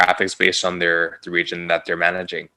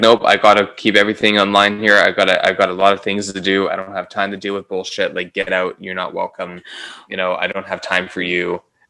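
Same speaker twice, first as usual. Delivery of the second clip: rude, dismissive, impatient woman's voice; 3 dB louder than usual. Retelling a woman brushing the speaker off: imitating a rude woman. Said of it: "She was very rude".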